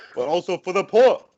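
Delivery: put-on voice of an old-fashioned politician. Joking with others about a Bernie Sanders impression: Bernie Sanders impression. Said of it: "it sounds like Bernie Sanders".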